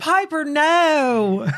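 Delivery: campy, high delivery with long drawn-out no.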